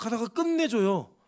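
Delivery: emphatic, drawn-out 끝내줘요.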